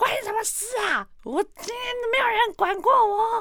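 very high, slow, enraged, furious outburst. Speaker retells answering back after being asked why so late, reenacting blowing up in rage. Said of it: "我整个气崩".

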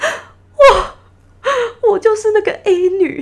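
very slow, loud, high, acted wailing cry-talk. Retelling how a girl suddenly burst out crying while telling her story: imitating a girl sobbing loudly. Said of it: "我就很记得她大哭".

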